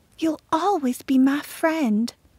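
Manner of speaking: soft, light, high half-whisper. Narrating a story, Segra speaks to Florette as they part: half-whispering. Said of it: "whispered Segra".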